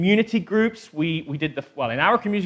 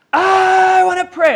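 put-on shrill, very high, loud, aggressive, demanding toddler yell; 8 dB louder than usual. Describing how the 2-year-old asks to pray, imitating Zoe's aggressive shout. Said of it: "pure aggression".

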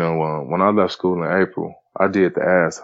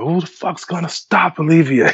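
acted-out screaming, pitched very high; 11 semitones higher, 4 dB louder than usual. Retelling how his coach screamed at him during a summer league game, imitating a scream. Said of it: "Coach Hollis screamed at me like".

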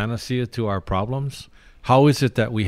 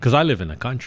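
ordinary talk, nothing marked

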